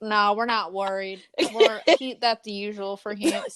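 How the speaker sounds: put-on Texas accent. Acting out the missing boy's parents: put-on texas accent. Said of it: "I'm sorry, Texas".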